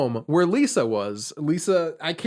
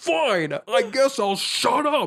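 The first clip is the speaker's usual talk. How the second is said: mock garbled, pitched-up talk through a full mouth; 7 semitones higher than usual. Retelling a scene where Grady is told to shut up: Grady talking with full mouth. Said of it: "with his full mouth still, he's like".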